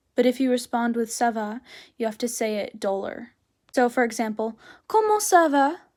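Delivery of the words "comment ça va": eager, lively, bright, raised enthusiastic voice. Teaching French greetings, show how people usually ask the question: enthusiastic. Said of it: "they usually sound enthusiastic".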